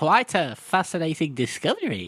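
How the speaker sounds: nerdy voice, pitched high with swooping swings. Praising a voice performance, the speaker does the Stephen Pacey nerdy voice. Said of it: "that typical fucking nerdy guy".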